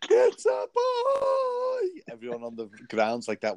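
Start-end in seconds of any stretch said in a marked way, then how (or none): 0.1-2.0 put-on shrill scream pitched way up, very high. Imagining announcing a gender reveal while spinning high up: mock screaming.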